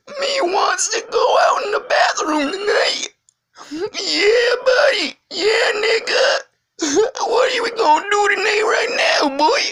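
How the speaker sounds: very high, loud teasing, mocking voice. Teasing a friend who denies sounding that way, speaker starts mocking a friend's voice. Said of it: "you sound like this".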